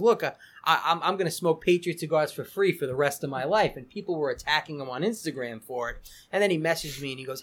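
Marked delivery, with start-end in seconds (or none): none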